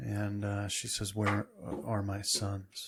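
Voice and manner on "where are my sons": hushed, whispered voice. Running a tabletop game, the narrator voices a woman speaking to the players in a whisper. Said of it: "It's like in a whisper".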